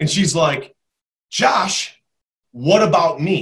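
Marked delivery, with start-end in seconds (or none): 1.3-3.4 very slow, annoyed, pissed-off tone. Retelling a vacation story where a girl at a bar asks: imitating someone pissed off. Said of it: "she looks at me dead in the eye, like, pissed off".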